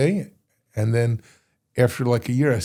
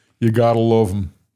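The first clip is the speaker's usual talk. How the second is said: put-on loud, raised, pure Brooklyn New York accent; 5 dB louder than usual. Quoting what a rabbi said, done as Rabbi Isai's Brooklyn accent. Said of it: "in his Brooklyn, deep East Side or New York accent".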